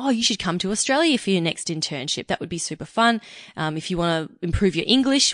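plain

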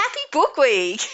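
enthusiastic, high-pitched voice. Redoing the other speaker's sign-off after saying it needs more excitement: more excited. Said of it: "You probably need to sound a bit more excited".

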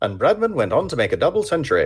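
put-on old-time 1950s radio announcer voice. Retrying a cricket line after feedback, in a 1950s radio announcer voice. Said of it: "I was trying to do a 1950s radio voice".

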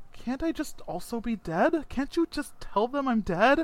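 nervous, stammering, sputtering, barely coherent delivery. An ensign who broke the prime directive faces being taken back to Starfleet; nervous, sputtering. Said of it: "He's so nervous. / He holds his hands up and he says, / he starts sputtering almost incoherently. He's so nervous".

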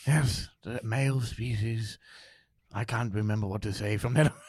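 slow, measured nature-documentary narration style. The speaker shows off an impression for the others: David Attenborough impression. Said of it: "I could do my David Attenborough".

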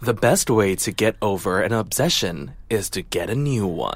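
very low, soft narrator voice-over voice. Announcing she'll do her best voice-over voice, the speaker delivers the line in it. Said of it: "I'm going to do my best VO voice right now".

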